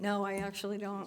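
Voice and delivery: worn-out, spent, exhausted, tired voice. Thanked for hard work on the budget and asked for more, answering exhausted. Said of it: "you sound exhausted".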